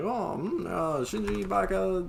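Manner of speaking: mocking, high, slow character voice.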